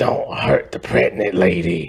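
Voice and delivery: raspy, rasped-out voice. Describing a movie scene where Blade helps a pregnant woman: raspy Blade voice. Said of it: "in his raspy, raspy voice that he has".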